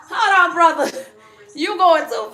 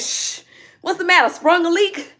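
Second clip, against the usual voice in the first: ordinary talk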